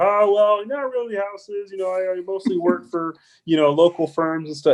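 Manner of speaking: high-pitched froggy puppet voice. Recalling an architect from a local firm describing his work, Kermit the Frog voice. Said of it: "he sounded like Kermit the Frog".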